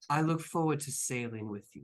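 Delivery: stage half-whisper said with full voice. Acting out what he half-whispered to you on meeting, retelling a half-whisper. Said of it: "So he whispers to you".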